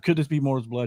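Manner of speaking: ordinary delivery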